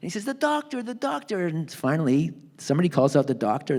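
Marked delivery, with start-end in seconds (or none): 0.2-1.5 very high, shrill, shrieked scream. Retelling how a man on the dock screamed at the boat: imitating someone screaming. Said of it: "He starts screaming".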